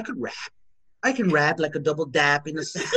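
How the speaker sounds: rambling, nonsensical talking while fast asleep. Retelling what a sister said at night: imitating sister sleep talking. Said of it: "she's sleep talking. She's like".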